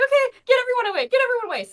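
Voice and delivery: very loud, fast, flustered, bubbly panicked babble. Voicing a character who panics, clearing people away: panicked bubbly voice. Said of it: "this very bubbly voice".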